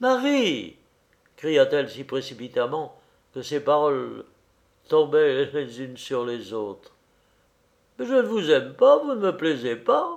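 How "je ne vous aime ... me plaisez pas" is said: awkward, embarrassed, high and swooping pitch. A little man replies to a woman who is ordering him out, embarrassed. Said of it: "visiblement embarrassé".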